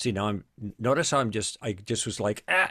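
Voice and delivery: ordinary talk, nothing marked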